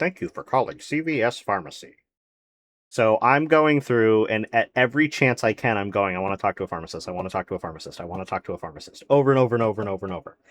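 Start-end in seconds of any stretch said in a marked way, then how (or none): 0.0-2.0 put-on robotic automated phone-menu voice. Retelling calling the pharmacy about a busted box, doing the CVS robot phone menu voice. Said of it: "It's the like robot".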